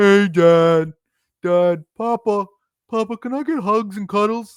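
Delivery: very high-pitched, put-on little dog voice. Recalling the voice he gave his talking dog, in a fake dog voice. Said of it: "that was just a fake voice and going".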